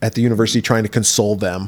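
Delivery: ordinary talk, nothing marked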